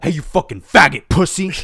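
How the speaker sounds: domineering yelling. Showing how a client who wants to be yelled at would be dominated: yelling and dominating. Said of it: "Like that".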